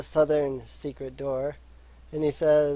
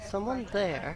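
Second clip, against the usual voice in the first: very soft, high calling voice; 5 semitones higher, 7 dB quieter than usual. A game master voices a woman answering a knock on the wall, in a very soft voice. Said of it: "speak out very softly".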